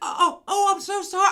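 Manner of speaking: high, loud, drawn-out, put-on very drunk woman voice. Retelling a wasted woman's apology after she bumped someone: imitating a very drunk woman. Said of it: "She was so fucked up".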